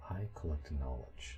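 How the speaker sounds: hushed, quiet, solemn half-whisper. The Sphinx answers a question about what she collects: quiet Sphinx half-whisper. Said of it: "You're really quiet".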